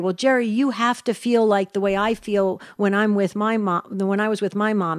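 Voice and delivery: ordinary talk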